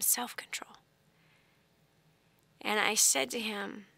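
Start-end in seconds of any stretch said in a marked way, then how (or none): 0.0-0.7 very quiet, breathy, barely voiced whisper. Retelling calming a screaming three-year-old, imitating a whisper. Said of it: "I whispered it to him".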